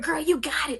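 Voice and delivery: mock screaming. Retelling screaming at herself in the mirror: retelling screaming at herself. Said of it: "I'm screaming to myself in the mirror".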